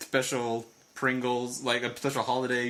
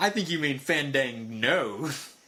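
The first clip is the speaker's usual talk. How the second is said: usual speaking voice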